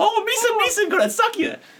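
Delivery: very high, slow, drawn-out goofy vampire voice. Joking about putting Jar Jar Binks in this movie with cape and fangs, do a Jar Jar Binks voice. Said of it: "Jar Jar Binks in this movie ... in a cape, little fangs".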